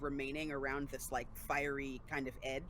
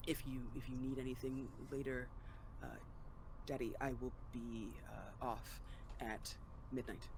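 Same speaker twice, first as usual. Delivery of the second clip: tiniest, quietest, hushed small voice; 3 semitones lower, 8 dB quieter than usual. In the story, Gem answers the player's character without meeting their gaze; Gem's tiniest, quietest voice. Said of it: "in the tiniest, quietest voice".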